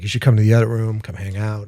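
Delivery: ordinary delivery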